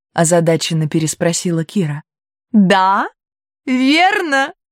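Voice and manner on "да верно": happy, glad, high, joyful exclaiming. Narrator reading a story, Iris answering Kira, joyful exclamation. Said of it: "радостно воскликнула Айрис".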